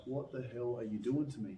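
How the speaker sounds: plain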